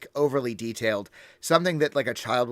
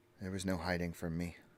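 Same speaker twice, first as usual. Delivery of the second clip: softly spoken, quick, low-key murmur; 6 semitones lower, 12 dB quieter than usual. Chandra, watching the elves, answers about hiding among the nobles, Chandra speaking quietly. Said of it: "she just kind of quietly says".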